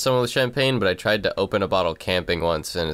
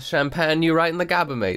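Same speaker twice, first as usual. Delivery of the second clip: bad fake British accent, very high; 9 semitones higher than usual. Joking about someone who fought a wall with a champagne cork, terrible put-on accent. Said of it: "terrible, terrible accents".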